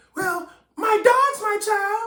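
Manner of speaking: very high, drawn-out mock yell.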